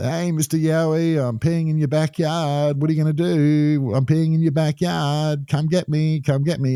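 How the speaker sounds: high, jeering, taunting yell. Retelling a truck driver taunting Mister Yowie at a truck stop, retelling a yell. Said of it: "he's yelling out".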